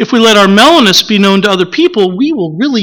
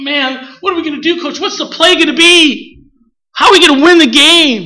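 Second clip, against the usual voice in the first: mock excited, high-pitched and all worked up; 6 semitones higher than usual. Telling how a young quarterback came to the coach during a timeout, retelling excited quarterback. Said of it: "He's all excited".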